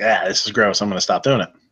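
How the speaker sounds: plain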